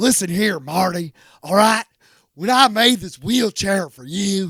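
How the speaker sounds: dry put-on movie-character voice. Showing how a Gary Busey impression should sound: thirsty Gary Busey impression. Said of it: "when you do Gary Busey, you gotta do it like he's so thirsty".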